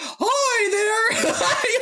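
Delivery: very high-pitched cartoon mouse voice. Retelling how a green cloud in the mirror greets her, in a Mickey Mouse voice. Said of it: "talking to her in this Mickey Mouse voice".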